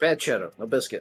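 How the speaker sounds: firm, strict, stern scolding tone. Telling off a shadow after being told to be stern: mock stern scolding. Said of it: "you gotta be stern".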